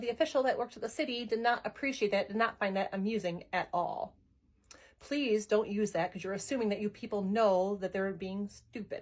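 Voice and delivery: ordinary delivery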